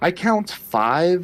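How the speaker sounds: very sarcastic, high, drawn-out "five". Voicing a merchant counting the party members: sarcastic. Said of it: "very sarcastically, she starts pointing".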